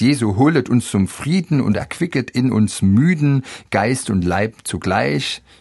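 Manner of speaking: plain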